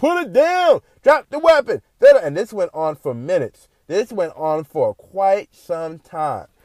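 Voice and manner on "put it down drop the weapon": very high, screamed, police-style voice. Retelling police surrounding an armed man: imitating police screaming. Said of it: "they screaming at this man like".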